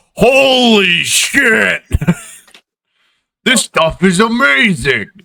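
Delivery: very high, very slow, drawn-out stunned cry. Voicing the driver watching the soap clean the spill: amazed exclamation in character. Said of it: "He just goes".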